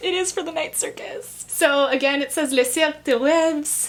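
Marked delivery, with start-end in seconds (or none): 2.5-3.9 put-on terrible French accent, higher pitched. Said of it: "we had to endure my terrible French accent".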